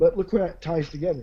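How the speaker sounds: ordinary talk, nothing marked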